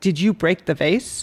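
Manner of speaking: upset, accusing, pointed adult voice. A parent asks a child about a broken vase, in an upset voice. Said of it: "ask in a kind of upset voice".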